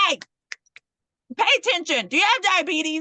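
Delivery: unkind, mean, harsh tone, acted out. Retelling how a school nurse questioned a girl who fainted: imitating a mean nurse. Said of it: "Why are you, like, so mean to her?".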